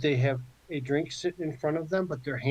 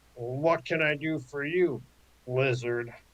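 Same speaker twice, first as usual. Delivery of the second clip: slow, drawn-out orc voice. Voicing a tall orc who stands and puffs up her chest: orc voice. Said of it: "the orc stands up at her full seven feet tall".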